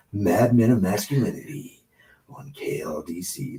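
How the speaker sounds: breathy, creepy, unsettling whispered voice. Podcast host saying the show's name while plugging it; creepy voice. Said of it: "That was your creepy voice".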